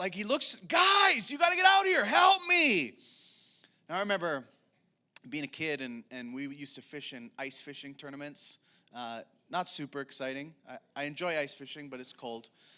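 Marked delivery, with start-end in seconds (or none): 0.6-2.9 very loud, very high, shrill panicked scream. Retelling a Bible story where Peter shouts for help: Peter screaming for help. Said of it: "he screams out".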